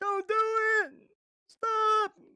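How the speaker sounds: very high, very loud, shrieking, pleading scream. Retelling a passenger's protest to the driver: imitating someone screaming. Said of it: "John was screaming and holding onto the seat".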